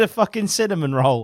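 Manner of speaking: plain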